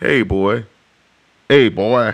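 slow southern drawl, laid on thick. Speaker retells a coworker calling him boy, imitating a southern accent. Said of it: "putting on a southern influence, a southern accent".

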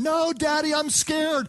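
put-on high, drawn-out, frightened little kid wailing scream. A father retells his son Buki on a four-wheeler, imitating Buki screaming scared. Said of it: "he was screaming the whole time".

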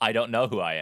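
plain

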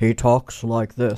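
voice of a man who runs things, authoritative. Recalling a joke about how a newsman talks: Ted Knight voice. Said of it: "joke with, um, Ted Knight".

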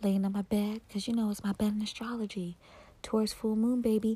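seductive, sultry put-on sexy voice. [name] opens a Taurus full moon video, in a sexy voice. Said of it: "using my sexy voice".

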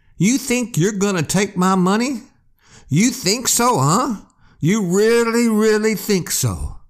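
high, nonstop shouting, never letting up. Narrator reads a wounded man's words after he fires a shotgun; yelling. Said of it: "just kept yelling".

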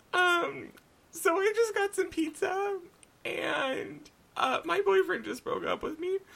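very high voice, barely holding back crying. Retelling a conversation about a breakup, acting out holding back tears. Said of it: "I was like slightly like trying not to cry".

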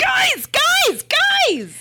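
really excited. Interrupting the group to announce news: really excited. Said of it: "I'm just really excited by this!".

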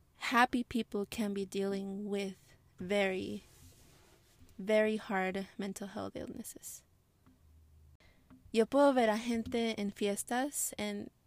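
slow, slightly emotional delivery with drawn-out words. Explaining that happy people can have mental illness, a little emotional. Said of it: "sorry, it's a little bit emotional".

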